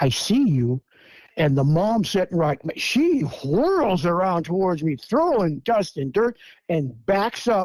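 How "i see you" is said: words gently eased out. Retelling talking to a little one peeking from behind a bush: very softly spoken. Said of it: "And I go very softly".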